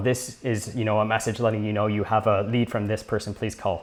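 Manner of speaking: usual speaking voice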